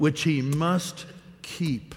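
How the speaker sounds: heavy stress on "must" in a slow phrase. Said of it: "I emphasize the word must".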